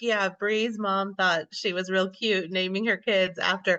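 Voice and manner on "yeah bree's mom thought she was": ordinary delivery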